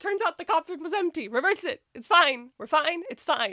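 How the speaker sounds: voice breaking and cracking, pitching up. Sick and unable to deal with the show's decision, with a voice cracking. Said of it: "my voice is starting to crack".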